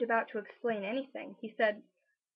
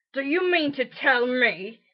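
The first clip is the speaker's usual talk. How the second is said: angry growl, slower pace; 10 dB louder than usual. Narrator voices a character confronting a cowering family, growling, angry. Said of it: "he growled at the Dursleys".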